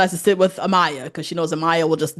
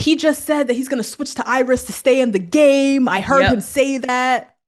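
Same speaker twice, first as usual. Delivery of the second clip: acted, high-pitched, accusing screaming; 7 semitones higher than usual. Retelling Huda screaming around the villa about what she heard: imitating Huda screaming. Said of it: "screaming around the villa".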